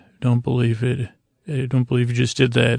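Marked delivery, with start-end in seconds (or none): none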